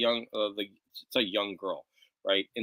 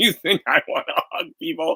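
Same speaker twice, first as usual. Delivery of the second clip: play-acted, loud, pitched-up, furious, pissed-off outburst; 6 semitones higher, 6 dB louder than usual. Retelling a scene just read in a book: imitating an angry man. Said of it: "the other guy got super pissed at him".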